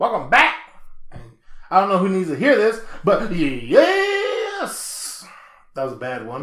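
cracking voice. Podcast host welcoming listeners back after a break, voice cracking. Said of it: "My voice is kind of cracking".

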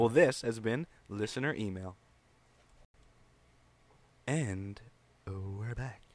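smooth jazz radio DJ announcer voice. A host wraps up the Listener Email segment in a smooth jazz voice. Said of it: "That's my smooth jazz voice".

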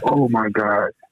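choked-up voice, holding back tears. Reacting to a listener's letter about being disowned, holding back tears. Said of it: "so hard not to cry right now".

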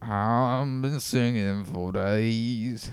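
put-on very slow, drawn-out old man voice. Trying out the role when asked for the best old man: Old Man Murdoch voice. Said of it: "so put on your best old man".

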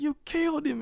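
put-on frantic, very high-pitched Southern accent. Recapping a scene, quoting a big guy losing it; imitating a southern accent. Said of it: "he's doing it in this Southern accent".

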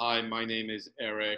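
dead-level, flat, toneless monotone delivery. Describing a writer he loves by imitating how he talks; imitating Eric's monotone. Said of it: "he is so monotone".

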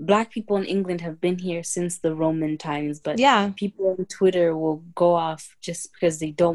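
usual speaking voice

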